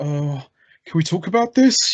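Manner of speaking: timid, nervous, cowering, scared voice. Mocking a fight scene where the hero gets scared: imitating a scared Batman. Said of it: "like Hollywood Hogan".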